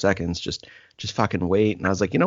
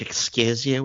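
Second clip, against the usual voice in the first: high, affronted, offended woman's voice; 5 semitones higher than usual. Retelling a run-in at the grocery store, the speaker imitates an offended woman.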